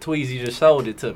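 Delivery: normal talking voice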